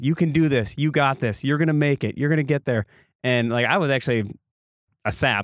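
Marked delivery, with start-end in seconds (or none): 0.0-2.8 play-acted, encouraging, rallying, cheering voice. Retelling kids on the course cheering on a girl: imitating kids yelling encouragement. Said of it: "yelling to this girl".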